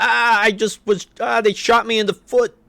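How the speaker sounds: shrill, very high, booming, loud cry of pain. Retelling an early comic strip where a character gets shot, retelling a yell in pain. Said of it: "the guy just yells".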